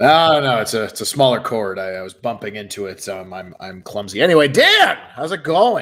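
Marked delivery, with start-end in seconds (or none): 4.5-5.8 put-on Canadian accent, very high and loud. Greeting his co-host after talking so much hockey, he speaks in a canadian accent. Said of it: "I've now gained a Canadian accent".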